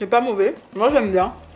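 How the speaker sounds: speaking with food in mouth. Eating on camera while talking to viewers, talking with mouth full. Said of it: "Par la bouche pleine".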